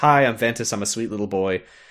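bright, cheerful, friendly tone. Recounting a scene where a character greets the dwarves, imitating a cheerful Ventus. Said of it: "he very cheerfully introduces himself".

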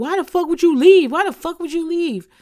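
very high, shrieking, screaming outburst. Retelling a show scene as someone walks in: imitating someone screaming. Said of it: "she starts screaming".

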